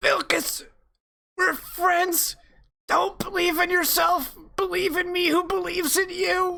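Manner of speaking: speaking through pained breaths. Voicing Mike, hurt on the ground, pleading with his friend Vilkas, with pained breath. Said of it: "with like pained breath, he goes".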